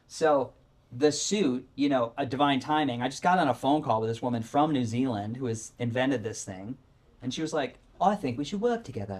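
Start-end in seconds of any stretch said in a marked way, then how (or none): 8.0-9.2 fake, put-on British accent. Quoting a woman from new zealand on a phone call, in a put-on british accent. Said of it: "That's a British accent".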